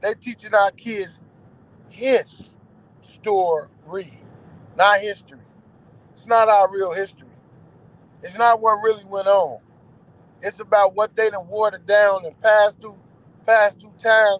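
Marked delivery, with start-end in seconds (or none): 0.0-5.4 slow, halting, deliberate, spelled out word by word. Repeating a point so listeners can catch it: saying it slowly. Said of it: "I'ma say it slow so y'all all can catch it".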